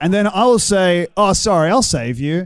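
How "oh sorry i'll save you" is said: plain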